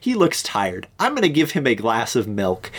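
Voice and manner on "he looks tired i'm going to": usual speaking voice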